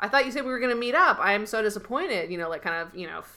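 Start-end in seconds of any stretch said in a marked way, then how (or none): 0.0-2.3 put-on villain, fake bad-guy flirting voice. Retelling a TV scene, quoting a character: imitating fake bad-guy flirting. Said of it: "fake bad guy flirting with her".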